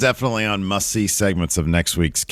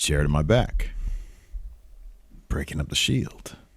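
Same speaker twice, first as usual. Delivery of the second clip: breathy, half-whispered mutter under the breath; 7 semitones lower, 7 dB quieter than usual. Retelling a wrestler's line to his rival: imitating someone muttering under his breath. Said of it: "just under his breath a little bit".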